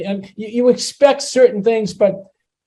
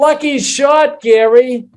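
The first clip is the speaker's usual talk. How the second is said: loud, high yell called across a distance; 5 semitones higher, 5 dB louder than usual. Telling a golf story, speaker acts out a spectator's shout to gary: retelling a yell.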